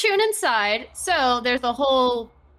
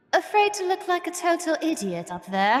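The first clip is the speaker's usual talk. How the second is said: put-on speaking in an English accent; 4 semitones higher than usual. Voicing what another character hears in their head, in Mirage's English accent. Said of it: "Mirage in her English voice".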